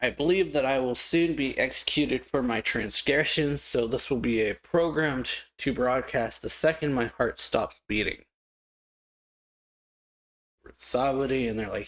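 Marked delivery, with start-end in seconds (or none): none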